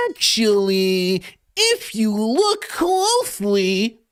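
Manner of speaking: most antagonizing voice, very high and slow. Doing an impression during a debate over who counts as a prince: antagonizing impression. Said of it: "as I do that impression".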